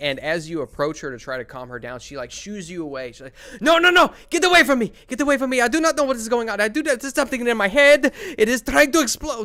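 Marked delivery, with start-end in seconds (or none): 3.6-9.5 very high, loud, shrieking hysterical screaming. Voicing a hysterical woman who shoos away those approaching her: hysterical screaming. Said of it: "just begins screaming".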